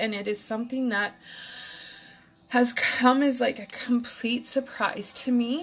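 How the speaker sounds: tearful voice, speaking through real tears. Speaking on Facebook while crying genuine tears, in a crying, tearful voice. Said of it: "That's why I'm crying on Facebook".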